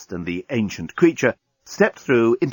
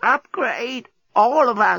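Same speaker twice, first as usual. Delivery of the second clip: very high, very slow, croaking ancient voice; 11 semitones higher than usual. Narrator voicing a wizened creature waving a device at a deskbot, croaking ancient voice. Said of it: "croaked in an ancient voice".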